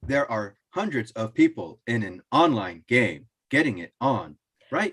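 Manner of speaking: mechanical, robotic early digital assistant delivery. Mocking an online game ad, the speaker quotes it in a monotone first-gen Siri voice. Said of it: "like monotone, like first generation Siri".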